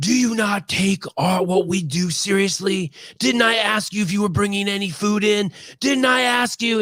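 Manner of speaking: screeching, very high, shrill, scolding yell. Telling how a woman yelled at the speaker's friend: imitating a woman yelling. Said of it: "she's yelling at my friend Carrie".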